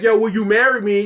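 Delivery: ordinary delivery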